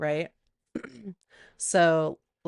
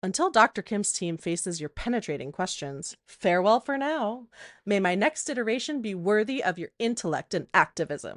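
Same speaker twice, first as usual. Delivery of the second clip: put-on snide, condescending, bitchy mocking tone; 2 semitones higher than usual. Retelling what the AI Liv said: imitating a bitchy reply. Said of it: "it just sounded so bitchy to me".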